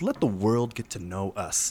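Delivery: soft, smooth TV commercial announcer voice. Podcast host closing the first episode and introducing themselves: commercial announcer voice. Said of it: "I sounded like a commercial".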